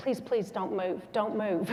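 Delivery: ordinary delivery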